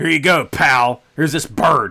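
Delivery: loud, full-voiced belting in a character voice. Saying every show needs one, the speaker launches into a Vince impression. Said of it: "The Vince impression now".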